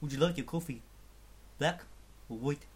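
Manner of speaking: put-on South African accent. Doing a borrowed joke for the listeners, in a South African accent. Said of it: "in a South African accent".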